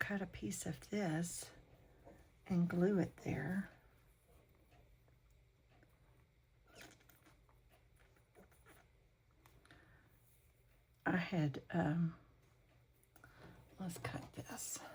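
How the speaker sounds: whispering as if silent. While cutting and gluing, the speaker whispers as if unable to make noise. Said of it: "I'm whispering like I can't make any noise".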